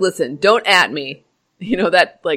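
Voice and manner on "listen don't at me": put-on surly teen voice, lower. Joking about how the W H O sounds: surly teenager voice. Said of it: "a surly teenager who's like".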